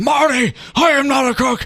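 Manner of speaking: very high-pitched, slow, stretched-out exclamation. Turning the Nixon line into a movie scientist character: Doc Brown voice. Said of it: "It also sounds like Doc Brown from Back to the Future".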